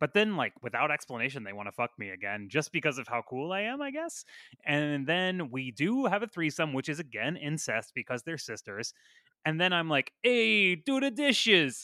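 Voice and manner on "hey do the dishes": friendly, very slow, very drawn-out delivery. Retelling a movie scene, giving an order: Fonzie-ish friendly voice. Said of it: "Fonzie-ish and a bit more friendly sounding".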